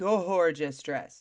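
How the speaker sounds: words stretched slow, savoring.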